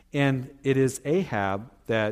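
plain

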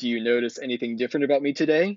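put-on deepest, manliest voice possible. Retelling a boy talking to a girl he likes, deepest, manliest voice. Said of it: "musters in like the deepest, manliest voice he can".

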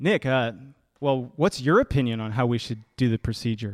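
mock patronizing, somewhat condescending, talking-down tone. Retelling a coworker's question about the procedure: imitating a somewhat condescending tone. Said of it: "in a somewhat condescending tone".

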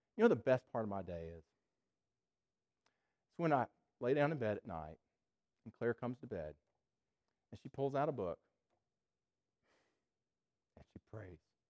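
tearful, choking up, about to cry. Describing a spouse praying for their daughters each night, tearful, about to cry. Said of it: "I'm gonna cry".

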